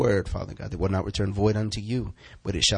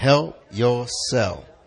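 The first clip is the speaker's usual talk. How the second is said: sassy, attitude-laden delivery; 2 semitones higher than usual. Leading a group in repeating a phrase, said with attitude. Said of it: "I say it with attitude".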